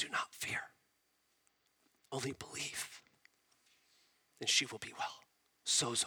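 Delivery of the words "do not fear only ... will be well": whispered, very quiet and close. Retelling the story, the speaker imagines Jesus speaking close to Jairus: whispering. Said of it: "and whispers".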